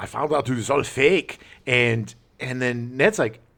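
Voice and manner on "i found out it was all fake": put-on German accent. Quoting the German villain's line from the movie: imitating the German in a German accent. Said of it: "I'm gonna do German accent".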